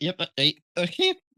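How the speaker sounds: high voice breaking mid-word. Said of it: "that was an actual voice crack".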